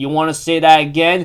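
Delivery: ordinary delivery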